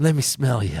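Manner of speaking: exaggerated put-on creepy old man voice. Speaker doing an impression of Joe Biden: Joe Biden impression. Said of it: "That's my Joe".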